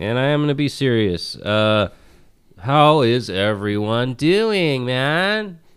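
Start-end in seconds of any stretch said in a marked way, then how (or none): 2.6-5.5 lazy, high, slow, stretched-out character voice. Greeting the others in a Pauly Shore voice. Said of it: "Pauly Shore, man".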